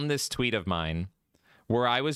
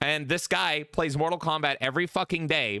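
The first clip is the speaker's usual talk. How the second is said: plain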